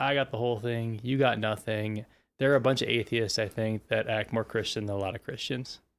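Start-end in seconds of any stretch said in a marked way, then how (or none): none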